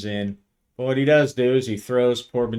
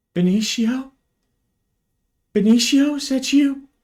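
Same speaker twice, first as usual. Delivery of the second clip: quavering, very high-pitched, trembling voice; 4 dB louder than usual. Narrating a story, reading the call through an open intercom in Alicia's trembling voice. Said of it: "Comes Alicia's trembling voice".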